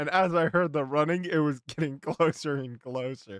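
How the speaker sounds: plain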